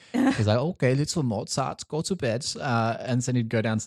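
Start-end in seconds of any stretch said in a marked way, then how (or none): 0.5-2.4 fake, put-on German accent, pitched up. Retelling how a dad put his son to bed, in put-on german accent. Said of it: "I'm just doing a German accent".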